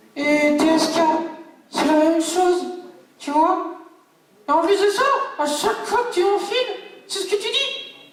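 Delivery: very high, unruly, hard-to-handle puppet voice. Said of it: "[name] la marionnette qui est plutot dur à gérer".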